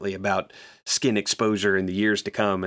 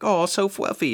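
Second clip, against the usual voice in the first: put-on very high, squeaky baby talk voice; 10 semitones higher than usual. Retelling a character holding a fluffy cat: imitating a baby voice. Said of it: "goes into, like, baby voice".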